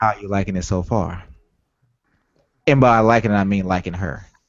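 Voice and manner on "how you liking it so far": playful, suggestive mock innuendo tone. Asking the others how they like a new game character: playfully suggestive tone. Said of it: "listen to the way I'm asking".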